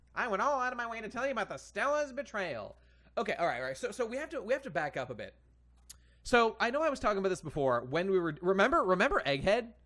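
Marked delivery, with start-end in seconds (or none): 0.2-2.8 high female character voice. Showing chat how a female character might sound: guessed voice for the character. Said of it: "This is what she sounds like".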